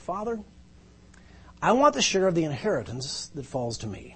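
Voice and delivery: very calm, placid, even, matter-of-fact voice. Telling the parable from Luke 15, quoting the younger son to his father, very calm voice. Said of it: "I said it in a very calm voice".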